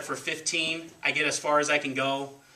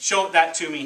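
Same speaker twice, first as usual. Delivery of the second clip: plain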